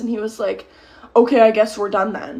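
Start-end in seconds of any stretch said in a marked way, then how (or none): none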